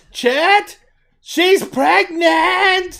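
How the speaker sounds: very high, very loud shriek. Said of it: "you hear a small shriek".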